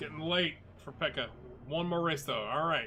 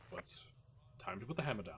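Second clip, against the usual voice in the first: calm, proper race engineer voice, lower and quieter; 7 semitones lower, 11 dB quieter than usual. Imitating Bono talking to Hamilton over the radio: imitating Bono, proper and calm. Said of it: "all proper and, you know, calm".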